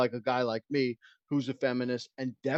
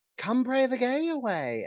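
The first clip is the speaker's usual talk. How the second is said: put-on lilting voice, higher pitch; 10 semitones higher than usual. Imitating conversion therapy priests with a put-on lilt. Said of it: "saying it with that lilt in your voice".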